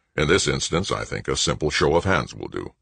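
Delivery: plain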